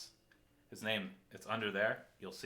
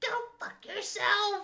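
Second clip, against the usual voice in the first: put-on five-year-old child voice, higher and louder; 9 dB louder than usual. Retelling what a teammate said on his mic: imitating a five-year-old kid. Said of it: "this five-year-old".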